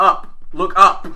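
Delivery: yelling out, loud and high-pitched.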